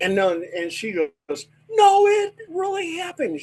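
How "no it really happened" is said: very high, acted-out sobbing through tears. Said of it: "And she was crying, real tears".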